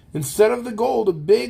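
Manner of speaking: ordinary delivery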